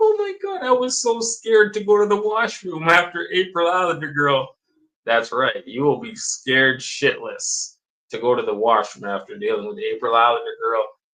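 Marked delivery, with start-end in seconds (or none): 0.0-4.6 very high-pitched, put-on blubbering, tearful sobbing voice. Acting out the crying little buddy after talking to April: mock crying. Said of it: "He's crying tears. He's like".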